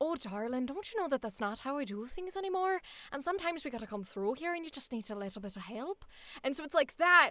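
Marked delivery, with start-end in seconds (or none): 0.0-6.0 put-on soft, guttural Irish old lady voice. Describing the Irish accent they do, the speaker demonstrates it: put-on Irish old lady voice. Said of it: "my Irish is very like".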